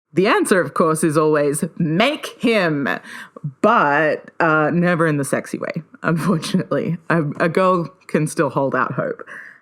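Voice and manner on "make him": ordinary talk, nothing marked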